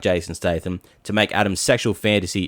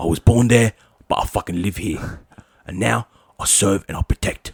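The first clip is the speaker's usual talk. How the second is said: put-on British accent. Imagining a movie recast, doing Captain America with a British accent: Jason Statham as Captain America. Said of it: "Don't worry about the accent".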